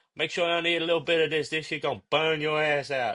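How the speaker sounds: put-on Creole-accented speech. Retelling what a man said to him, in a Creole accent. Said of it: "he was like Creole accent".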